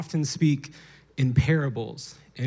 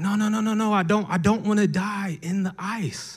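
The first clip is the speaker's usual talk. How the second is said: high-pitched crying, sobbing out loud; 7 semitones higher than usual. Telling a parable, a bird stuck in the ice: crying bird. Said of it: "the bird is crying".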